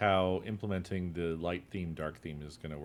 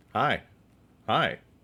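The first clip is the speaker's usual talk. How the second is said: loud, outright yelling; 3 semitones higher, 7 dB louder than usual. Answering a request to talk louder during an audio check: yelling. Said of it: "I'm yelling now".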